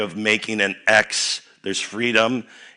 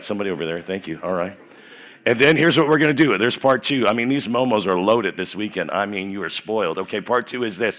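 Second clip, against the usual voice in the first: plain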